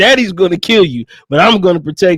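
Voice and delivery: ordinary talk, nothing marked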